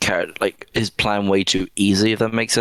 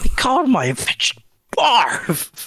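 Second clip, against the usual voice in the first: disgusted, very high, swooping voice. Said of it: "disgusting in his voice".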